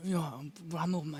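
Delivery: soft, murmured impression voice. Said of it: "바비가 이제 말을 해요".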